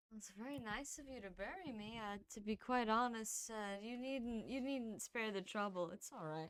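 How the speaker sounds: very soft, quiet, drowsy, half-awake mumbling with laughter. A man answers someone offering to bury him, half-awake mumble-laughing. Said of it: "[name]'s kind of like mumble laughing to himself, / Yeah, he kind of takes a sip and then just half awake, / [name]'s kind of like mumble laughing to himself".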